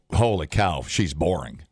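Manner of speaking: normal talking voice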